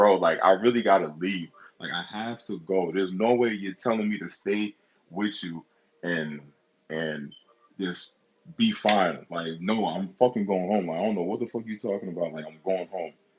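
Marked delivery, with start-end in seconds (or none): none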